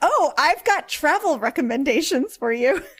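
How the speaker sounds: mock bright, eager, helpful, sudden cheery switch. Retelling how a ship captain suddenly perks up: imitating Captain Scalar perking up. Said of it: "suddenly perks up and his tone completely changes".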